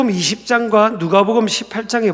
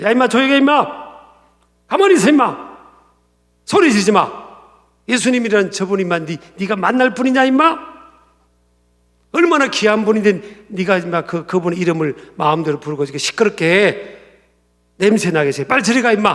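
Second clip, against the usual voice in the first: play-acted crude, rough, harsh scolding. Retelling how the crowd rebuked a man calling Jesus' name, imitating a harsh scolding. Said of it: "아마 이런 투의 꾸지람이 있을 겁니다".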